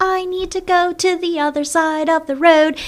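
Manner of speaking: put-on tiny, high, slow little-kid baby voice. Retelling what a little girl said crossing the street: imitating a tiny child's voice. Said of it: "in their tiny little baby voices".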